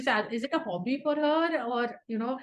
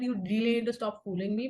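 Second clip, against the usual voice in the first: ordinary delivery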